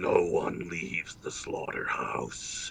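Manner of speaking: hushed, harsh, metallic robot whisper. Voicing an armored killer leveling a machine gun: horrible metallic voice. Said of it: "with a horrible metallic voice".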